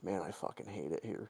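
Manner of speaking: acted whispering voice. Retelling what the worker at the window said: imitating someone whispering. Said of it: "he whispered it to me".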